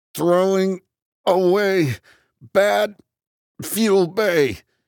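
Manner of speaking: very high, strained, halting voice through clenched teeth. Narrator grunts and forces an arm forward to tap a screen, through clenched teeth. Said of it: "I say through clenched teeth".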